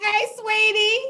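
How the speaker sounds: very high-pitched, mock open-armed welcoming tone. Retelling how one greets people at arrival: imitating own welcoming greeting. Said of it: "just welcoming everybody with open arms".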